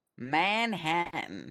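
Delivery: put-on Southern-accented delivery. Answering which Liberty City borough they're from, in a southern accent. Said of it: "say it with a southern accent".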